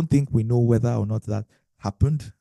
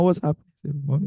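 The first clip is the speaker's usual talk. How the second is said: put-on crying, much higher; 5 semitones higher than usual. Speaker acting out a phone call with their mom, imitating someone crying. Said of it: "you know that you're already crying".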